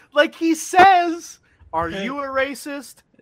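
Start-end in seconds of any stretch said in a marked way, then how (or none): 1.7-2.9 put-on smiling, grinning tone, higher. Retelling how someone asked a question: imitating a grinning question. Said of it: "with a grin".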